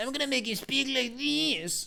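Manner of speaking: very high, belittling, put-on little bitch voice. Showing the voice he will give Hubert if Hubert rejoins the party: little bitch voice. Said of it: "I'm gonna give him the little bitch voice".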